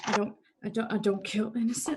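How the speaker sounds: hushed, muttered whisper under the breath. Voicing a character pacing and whispering to herself under her breath. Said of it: "start whispering under her breath".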